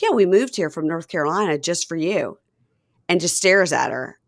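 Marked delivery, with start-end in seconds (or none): 0.0-2.4 put-on, bone-dry, serious-sounding deadpan delivery. Retelling a joke that Mom told, imitating her dead serious. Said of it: "dead serious".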